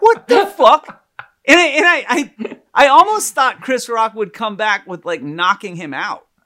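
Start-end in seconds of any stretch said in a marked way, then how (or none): 0.0-1.0 loud, high, shocked outburst. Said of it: "I was like".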